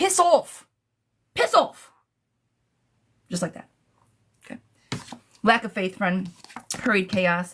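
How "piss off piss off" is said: very high, very slow put-on British accent. Showing how a phrase has to be said, british accent. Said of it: "You gotta say it with the accent".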